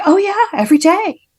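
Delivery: very high, surprised, as if it were obvious. Retelling the mother's reply to a question, imitating her surprise. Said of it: "with such surprise in her voice".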